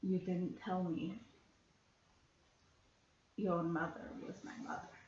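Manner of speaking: threatening voice with menace behind every word. Holding a dagger up to another character in character: threatening.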